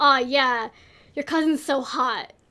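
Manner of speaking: ordinary talk, nothing marked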